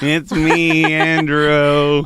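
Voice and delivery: loud, put-on young little boy voice. Greeting everybody at the start: put-on little boy voice. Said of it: "it's like little boy Andrew here".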